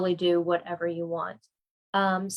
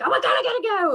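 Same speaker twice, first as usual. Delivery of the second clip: acted, very high, loud yelled outburst; 12 semitones higher, 5 dB louder than usual. Retelling noticing the time at work, imitating own past yell. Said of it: "I, like, yelled".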